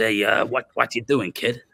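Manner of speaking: put-on tough, hard old gangster voice. Retelling how an old man walked up during a documentary shoot, imitating an old man's voice. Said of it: "And this is how one of them spoke".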